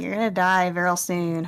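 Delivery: put-on unearthly, eerie otherworldly voice. Telling a friend what a voice once said, in an otherworldly voice. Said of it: "this otherworldly voice being like".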